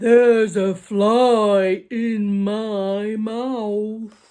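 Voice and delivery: booming giant voice, very loud. Narrating a story, voice a giant speaking out of the dark; big voice. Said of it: "Then a big voice said".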